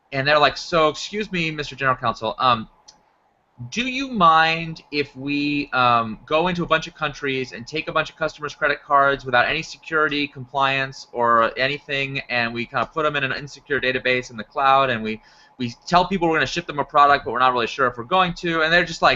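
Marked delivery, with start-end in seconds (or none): none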